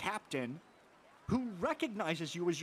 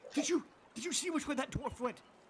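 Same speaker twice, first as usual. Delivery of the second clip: muffled voice, much higher pitch; 8 semitones higher than usual. A storyteller voices a guard heard from inside a dwarf's bag: muffled guard voice. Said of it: "you hear muffled".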